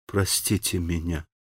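very soft, quiet, half-whispered moan. A woman stops beside another and begs her pardon in a quiet, almost half-whispered moan. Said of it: "тихо, почти шепотом простонала ей".

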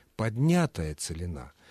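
поднятая with the stress placed on НЯ.

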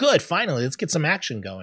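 normal talking voice

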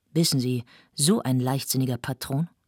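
ordinary delivery

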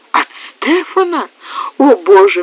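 sudden, startled exclaiming cry. A woman hears who sent the visitor to her: crying out. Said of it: "вскричала Анна".

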